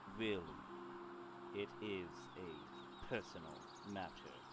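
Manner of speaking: dropped, deep-voiced, low delivery. A character in a story refuses a follow-up question, in a deep tone. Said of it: "She says in a deep tone".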